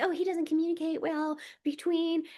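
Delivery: scornful mock women's voice. Speaker acts out what women say, in a mocking impersonation of women. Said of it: "I sound like a dick when I'm e- emulating women".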